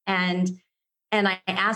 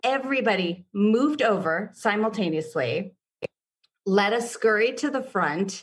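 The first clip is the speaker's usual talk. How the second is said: ordinary talk, nothing marked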